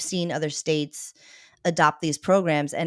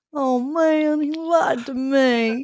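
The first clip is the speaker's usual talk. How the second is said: put-on very slow, high, drawn-out babyish crybaby whine; 9 semitones higher, 3 dB louder than usual. Mocking the lieutenant governor's complaint: mocking a whiny crybaby. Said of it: "kick and scream and cry like a little babby".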